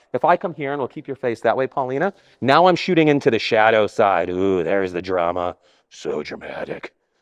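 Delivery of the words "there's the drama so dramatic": very low, slow, brooding voice. A photographer shooting into the shadow side slips into his Batman voice. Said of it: "It's my Batman voice".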